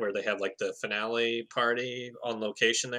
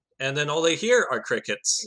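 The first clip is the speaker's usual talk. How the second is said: ordinary delivery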